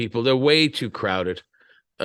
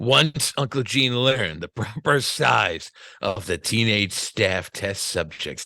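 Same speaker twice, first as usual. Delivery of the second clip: slow, creepy, spooky put-on voice; 3 semitones lower, 5 dB quieter than usual. Reading a passage aloud in a creepy voice. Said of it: "I'm going to read it like in a creepy voice".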